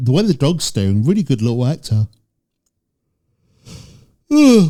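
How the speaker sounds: speaking through a yawn. Speaker comments on a dog in a video after getting up early; yawning while talking. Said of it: "apologies for yawning".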